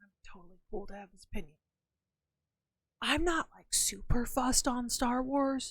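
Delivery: hushed voice. Admitting an opinion to viewers about not liking star wars: whispering. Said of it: "I'm gonna whisper this".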